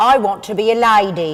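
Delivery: London Cockney accent with vowels pulled back. Demonstrating accents to another speaker who repeats each line, in a cockney accent. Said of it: "for Cockney".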